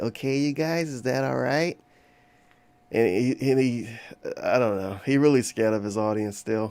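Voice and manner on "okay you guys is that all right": put-on old person voice, talking down as to children. Imitating someone addressing his audience: old person talking to children voice. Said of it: "old person talking to children voice".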